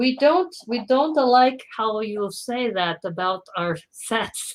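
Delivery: badly done put-on Danish accent. Briefly voicing someone else in a terrible Danish accent. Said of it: "That's a terrible Danish accent".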